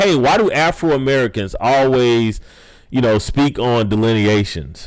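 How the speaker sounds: ordinary delivery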